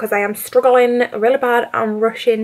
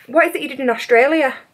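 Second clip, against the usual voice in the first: ordinary delivery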